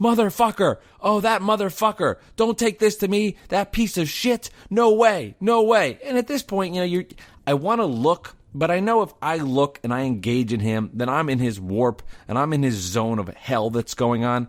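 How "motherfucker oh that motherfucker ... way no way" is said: put-on, pitched-up, furious cursing angry yelling. Retelling how a man on a bench yelled into his phone: imitating a man yelling into a phone. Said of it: "he is just yelling into his phone about something. A little bit like this".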